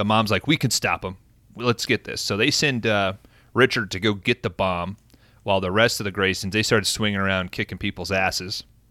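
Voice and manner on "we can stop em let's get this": usual speaking voice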